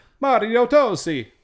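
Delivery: exaggerated bad fake Italian accent, very high, loud. Saying a name they can't pronounce correctly: bad italian accent. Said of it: "I'll just say it in a bad Italian voice".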